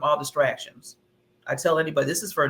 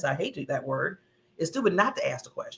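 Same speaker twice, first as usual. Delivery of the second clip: ordinary delivery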